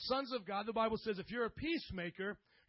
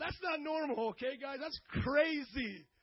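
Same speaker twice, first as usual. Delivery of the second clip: ordinary talk, nothing marked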